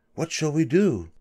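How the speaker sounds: whispering. Dr. Desoto asks his wife about the suffering fox, whispered. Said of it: "he whispered to his wife".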